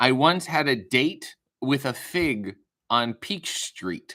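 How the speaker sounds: confident, finished punchline delivery. Retelling a grandmother's saying, imitating grandmother delivering a joke. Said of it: "she would say it as if it was, like, a j-, fully formed joke".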